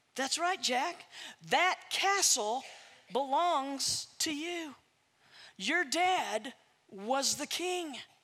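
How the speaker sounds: voice of an aged woman. A storyteller voices an elderly woman speaking to Jack, in an elderly woman's voice. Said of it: "And he sees an elderly woman approaching him. / And he sees an elderly woman approaching him. He also sees a magnificent castle in the near distance, not too far. The elderly woman approaches and [nam".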